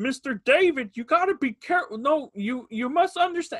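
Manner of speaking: put-on puppet-like voice. Speaker imitates how a man started talking to him: imitating a Muppet-like voice. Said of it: "he sounds like a Muppet".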